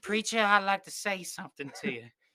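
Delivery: put-on high, creepy old-man voice. Discussing a film, a speaker quotes the preacher: Robert Pattinson preacher impression. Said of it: "he sound like the grandpa from Family Guy?".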